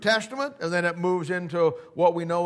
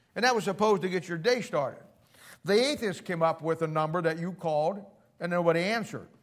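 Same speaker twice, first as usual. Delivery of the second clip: normal talking voice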